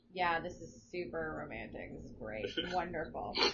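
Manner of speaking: put-on deadpan delivery. Recounting a date with a boyfriend, acting out a deadpan reply. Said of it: "deadpan face".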